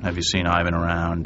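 ordinary delivery

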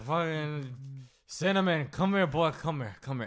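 put-on boozy, drunken calling voice, been drinking all day. Acting out calling a horse after stumbling out of a bar: acting drunk. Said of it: "you've been drinking since one in the afternoon".

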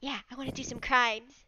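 soft, hushed half-whisper with no voice. In the roleplay, replying to Princess's half-whisper, Mad Lad half-whispering back. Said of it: "Mad Lad smiles and whispers back".

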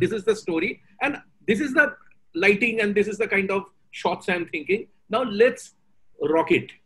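ordinary delivery

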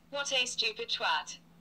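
affected upper-class English woman's voice. Giving the device's analysis at the push of a button: Penelope Fortescue Smythe voice. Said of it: "I've chosen the posh English lady's voice".

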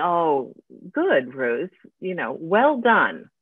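slow, sing-song, snarky, ironic sarcasm. Acting out the inner voice heard after doing something stupid: imitating a sarcastic inner voice.

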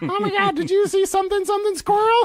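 very high, loud, shrill voice. Pretending to be the other speaker's mom: impression of the other speaker's mom. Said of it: "was that a good impression?".

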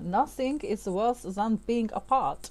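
worst German accent going. Acting out a romantic line, in the worst bad German accent. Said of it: "the worst accent you ever heard".

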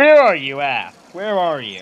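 teasing, needling, annoying sing-song taunt. Stalking another player during a game, calling out in an annoying voice. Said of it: "I'm gonna keep stalking in this annoying voice".

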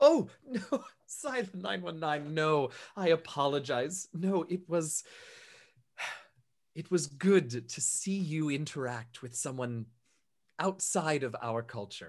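giggling, helpless laughter, barely held together. Narrating a woman apologizing after being asked if she is mocking: laughing while apologizing. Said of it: "This just makes her laugh harder".

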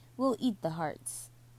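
ordinary delivery, nothing marked

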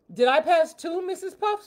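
excited, hopeful, high, eager, rising intonation. A student asks the teacher after a classmate passes the test; excited question. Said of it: "SpongeBob asked excitedly".

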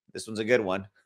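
said with obvious sarcasm. Introducing path two from a list of answers: sarcastic. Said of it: "Do you sense the sarcasm?".

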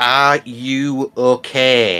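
overdone, exaggerated voice. A player checks on Nugget, who can't really communicate, with exaggerated delivery. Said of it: "exaggerate anything".

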